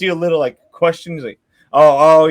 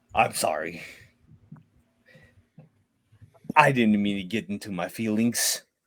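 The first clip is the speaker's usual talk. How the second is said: very low, hushed, flustered, apologetic voice; 8 semitones lower, 11 dB quieter than usual. Narrator voices a swordsman apologizing to the group, flustered. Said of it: "he's totally flustered".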